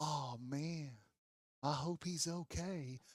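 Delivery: low-key, soft-spoken, hushed and drawn out. Retelling what Grayson said while standing there: imitating Grayson's soft-spoken voice. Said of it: "he's a little more soft-spoken guy".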